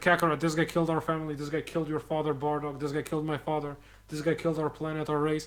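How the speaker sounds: ordinary talk, nothing marked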